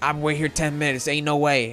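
put-on Southern accent. Retelling a dispute over plates, the speaker quotes an older woman, imitating a southern accent. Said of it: "in a southern accent".

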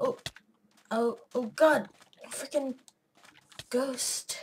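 panicked, drawn-out outburst. Player spots a ghost in a game, panicking. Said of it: "I can't think of the word right now because I'm just panicking".

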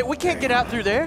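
ordinary delivery

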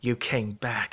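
hushed whisper. The stabbed beast speaks to the one who pulled him to safety, whispered. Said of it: "he whispered".

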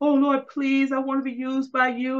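put-on high, weepy, tearful, begging and pleading voice. Retelling own past feelings of unworthiness: imitating own past crying. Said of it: "just crying".

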